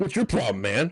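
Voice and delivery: put-on angry, confrontational tone. Retelling how a man came storming up over parking: imitating an angry confrontation. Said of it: "comes storming up to me".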